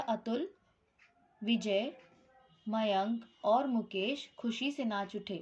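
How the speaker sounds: brief pause right after the name Atul. Showing phrasing in a sentence listing names, short pause after Atul. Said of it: "Atul के बाद मैंने थोड़ा पॉज लिया।".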